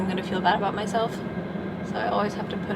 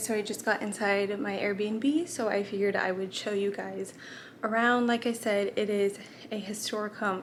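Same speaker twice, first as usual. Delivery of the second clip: slow, winded, out-of-breath talk; 5 dB quieter than usual. Showing viewers around an Airbnb after hauling a suitcase upstairs, out of breath. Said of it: "I'm like out of breath".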